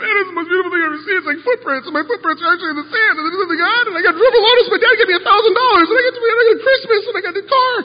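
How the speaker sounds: very high, very loud wailing and blubbering. Retelling how a caller rang from the ocean at sunset, imitating Lee blubbering. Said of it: "he's blubbering".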